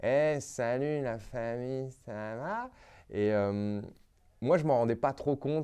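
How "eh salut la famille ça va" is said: squeaky, high-pitched voice, very slow, like slow motion. Imitating how he used to speak after relearning French: imitating own slow high-pitched voice. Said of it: "Je parlais au ralenti avec une voix aiguë".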